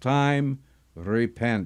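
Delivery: ordinary delivery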